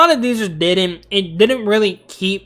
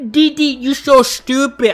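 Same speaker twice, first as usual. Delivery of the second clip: put-on high-pitched cartoon boy voice, each word dragged out; 6 semitones higher than usual. Ranking cartoon shows, the speaker tries a Dexter's Laboratory line: Dexter impression. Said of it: "my impressions are terrible".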